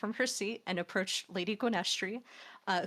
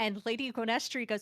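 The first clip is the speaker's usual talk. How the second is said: ordinary talk, nothing marked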